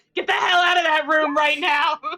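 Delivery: shouting in a character voice. Playing a character who kicks down a door, shouting in character. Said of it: "He's like".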